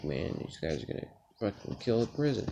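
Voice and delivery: muttered, mumbled under the breath to oneself. Retelling a dream, talking to oneself: imitating mumbling under one's breath. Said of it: "I was just mumbling under my breath".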